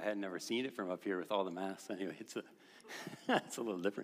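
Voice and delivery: soft, laughing through the words. Greeting a masked audience from up here, laughing while talking. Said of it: "Sorry, I'm laughing".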